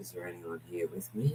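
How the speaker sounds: very quiet, hushed, frightened voice. Retelling what a scared investigator said on a recording: imitating a real quiet scared voice. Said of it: "Like that real quiet".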